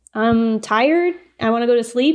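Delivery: normal talking voice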